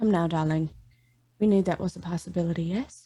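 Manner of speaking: quick, gentle, calming, soothing tone. Player in a role-play answers the news by nodding and speaking in a soothing tone. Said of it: "I like say it in a very like soothing tone".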